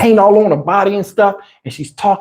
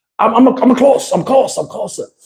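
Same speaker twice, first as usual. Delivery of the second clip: imitated Chinese accent; 3 semitones higher than usual. Retelling a phone call from an arriving investor: imitating a Chinese man's accent. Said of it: "I heard the guy's accent".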